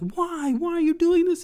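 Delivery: put-on very high, loud, panicking little-girl voice.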